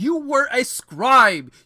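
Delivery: high, loud, exasperated scolding rant.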